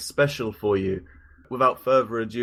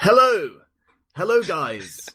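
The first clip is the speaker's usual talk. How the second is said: clumsy put-on Manchester accent, high and swooping; 6 semitones higher than usual. Standing in for the absent Tom, the host tries a bad Tom impression. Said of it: "from a council estate in Manchester".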